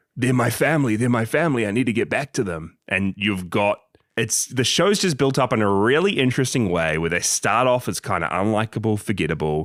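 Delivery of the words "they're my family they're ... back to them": high-pitched screaming cry. Retelling a scene where Kentaro lies in a hospital bed: imitating Kentaro screaming. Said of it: "he's just screaming out, like".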